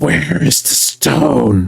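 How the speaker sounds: very slow, rough, high rasping voice. Voicing an enemy who whirls toward a charging attacker: rasping voice. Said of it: "you hear him rasp".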